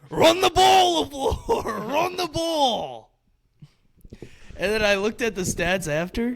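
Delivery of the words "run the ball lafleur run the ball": put-on very high, shrill, drawn-out drunken yell. Retelling how a drunk brother yelled at the coach from the stands: imitating a drunk brother yelling.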